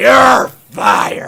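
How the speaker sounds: very loud, rough shout. Doing a favourite wrestler-world impersonation: Vince McMahon impression. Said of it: "I think Vince's is up there".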